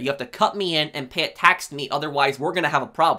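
ordinary talk, nothing marked

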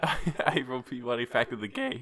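cracked, breaking voice cracking mid-line. Reading out the title they wrote to a co-host, voice cracking. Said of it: "Your voice cracked".

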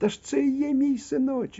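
dismayed outcry, very high-pitched. A narrator reads a fox crying out to a coyote, crying out. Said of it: "закричала лисиця".

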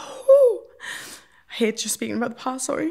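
voice choking up with tears, on the verge of crying. Speaker apologizing to the other person for reacting to talk of the past, about to cry. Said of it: "I'm about to cry".

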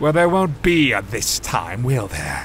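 sneering, scornful, contemptuous tone. Answering another man's snarled complaint, sneering. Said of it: "sneered Darren".

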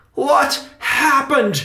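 insistent, demanding tone at a very high pitch. An uncle questions the boy who just apologized about the escaped mouse, demanding. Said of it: "demanded Uncle Riley".

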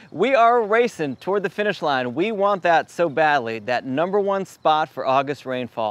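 sarcastic, tongue-in-cheek eagerness. Reading out rainfall totals, the speaker says this part sarcastically. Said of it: "I'm being sarcastic".

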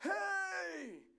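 very high, loud, big scream. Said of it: "I hear this big loud scream".

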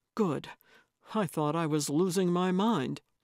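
ordinary delivery

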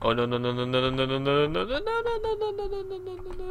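high, rapid, rattled-off panicked voice.

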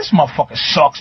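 put-on mutter under the breath. Retelling a man who walked up behind him, muttering under his breath. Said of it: "saying shit under his breath".

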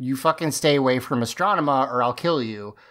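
ordinary talk, nothing marked

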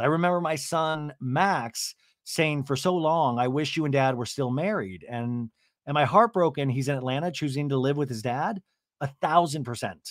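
ordinary talk, nothing marked

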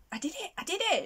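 thrilled, elated cheer, high-pitched and rattled off fast.

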